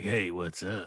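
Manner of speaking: low, seductive announcer voice. Imitating how a guest came on: Hugh's sexy voice. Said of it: "with your sexy voice".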